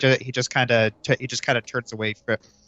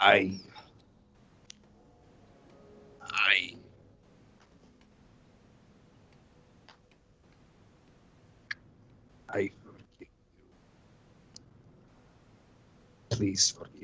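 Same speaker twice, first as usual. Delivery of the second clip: very tense, strained, halting delivery, quieter; 3 semitones lower, 9 dB quieter than usual. Voicing Orgrim forcing out an apology, very tense halting voice. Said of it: "very tensely".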